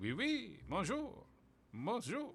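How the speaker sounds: high, swooping put-on French accent. Discussing accents, the speaker tries out a put-on french accent. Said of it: "Can I do a French accent?".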